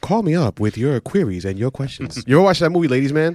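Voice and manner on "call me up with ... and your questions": on-air radio DJ patter, late-night AM host style. Imitating another speaker as a late-night radio host: late-night radio host voice. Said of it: "you just sounded like".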